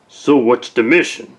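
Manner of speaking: put-on tough guy voice. In a drama scene, a character asks about the mission in a put-on tough guy voice. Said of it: "stop with the tough guy voice".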